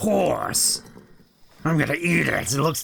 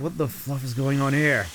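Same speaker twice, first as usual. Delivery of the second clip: ordinary talk, nothing marked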